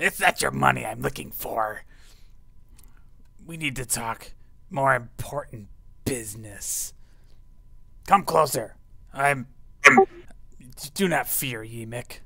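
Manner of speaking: loud, shouting goblin voice. Game master voicing a goblin yelling at the other goblins, goblin yelling. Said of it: "he's like yelling at them in".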